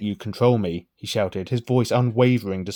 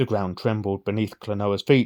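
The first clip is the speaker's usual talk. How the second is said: normal talking voice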